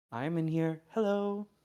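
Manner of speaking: very soft voice. Voicing a character in a game scene: softest voice. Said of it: "just the softest voice going".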